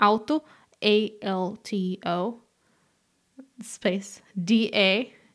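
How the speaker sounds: slow, letter-by-letter spelling.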